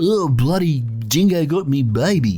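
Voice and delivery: exaggerated, overdone put-on Australian accent. Showing how an overdone put-on australian accent sounds: exaggerated put-on australian accent. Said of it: "an Australian putting on the Australian accent even harder".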